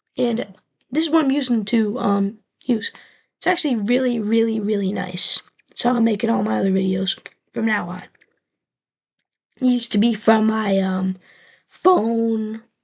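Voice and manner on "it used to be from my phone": voice breaking, drawn way out, very slow. A video maker talks about his recording setup, voice cracking. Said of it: "That was the worst voice crack".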